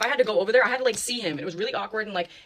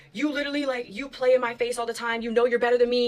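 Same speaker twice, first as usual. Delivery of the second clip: mock screaming, higher; 3 semitones higher than usual. Retelling a friend screaming in her face: imitating a friend screaming. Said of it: "literally going on a rant".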